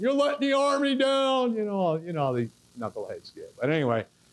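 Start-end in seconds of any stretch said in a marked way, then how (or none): 0.0-1.5 very high, loud, shrill screaming. Retelling what others at the finish line screamed: imitating someone screaming. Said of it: "they're screaming at me from the finish line".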